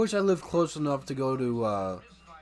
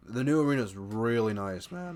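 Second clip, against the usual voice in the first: cracking voice, breaking mid-line. Mid-conversation, the speaker's voice suddenly cracks: voice cracking. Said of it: "Oh, voice crack".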